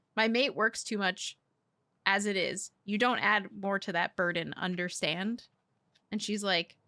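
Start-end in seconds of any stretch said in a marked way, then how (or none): none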